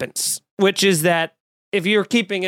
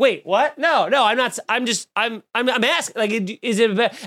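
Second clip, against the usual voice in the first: put-on panicked stammering, higher pitch; 4 semitones higher than usual. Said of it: "panic P R attack where he was like".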